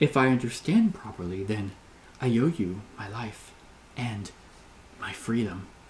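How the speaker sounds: faltering voice. Narrating a second-person story, a woman answers you in a faltering voice. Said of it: "she says in a faltering voice".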